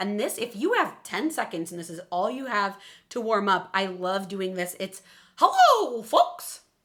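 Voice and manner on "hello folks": very high, loud squeaky delivery. Demonstrating a quick vocal warm-up exercise, Mickey Mouse voice. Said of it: "It's my Mickey Mouse voice".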